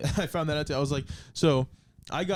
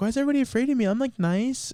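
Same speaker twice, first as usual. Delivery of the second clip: woman's voice, pitched very high; 9 semitones higher, 4 dB louder than usual. Retelling what she said to the host, the speaker is imitating her voice. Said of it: "man, I sound like her".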